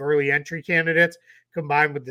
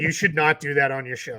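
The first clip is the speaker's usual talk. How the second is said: put-on annoyed, angry voice. Retelling how a daughter complains when silliness starts: imitating annoyed daughter. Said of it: "my daughter gets very mad".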